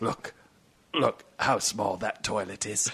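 put-on celebrity-style British accent. Asked for his best Michael Caine, Michael Caine impression. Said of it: "That's my impression of Michael Caine".

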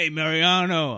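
put-on Italian accent. Imitating a contestant: Italian accent as Rob. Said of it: "I always do an Italian accent for Rob".

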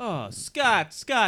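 high, soothing, coaxing handler voice.

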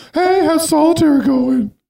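very high-pitched, breezy, casual tone. Doing a Winona Ryder impression while asking about solitaire: Winona Ryder impression. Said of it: "that's a great Winona Ryder impression".

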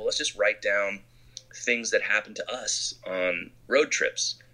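ordinary delivery

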